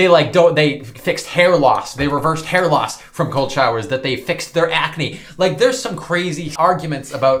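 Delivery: plain reading voice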